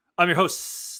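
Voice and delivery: snake-like hissing voice with hissed s sounds. Podcast host introducing himself at the top of the show, hissing like a snake. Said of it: "Why did I say it like a snake?".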